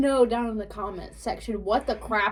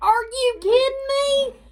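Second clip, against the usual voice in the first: very high, loud, shrill screamed outcry; 6 dB louder than usual. Retelling how she screamed out in the theater: retelling a scream. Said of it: "because I screamed out in the theater".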